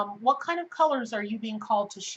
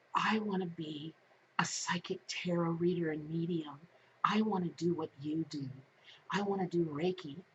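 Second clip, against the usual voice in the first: put-on whisper, lower and quieter; 4 semitones lower, 8 dB quieter than usual. Retelling what clients say in the office, imitating a whisper. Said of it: "why are you whispering?".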